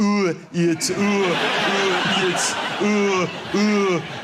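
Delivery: man's voiceover announcer voice.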